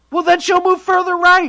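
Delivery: yelling. Answering another speaker during a political argument: yelling. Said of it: "Why are you yelling?".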